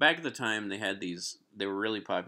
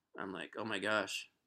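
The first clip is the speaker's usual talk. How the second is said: ordinary talk, nothing marked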